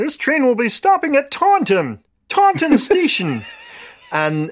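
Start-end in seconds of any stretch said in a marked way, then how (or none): 0.0-3.4 very high, squeaky, swooping put-on cartoon frog voice. Doing a train announcement on the line to Exeter: Kermit the Frog voice. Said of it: "in the voice of Kermit the Frog".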